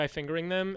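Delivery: ordinary talk, nothing marked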